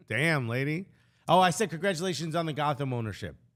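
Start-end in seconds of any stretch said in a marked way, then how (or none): none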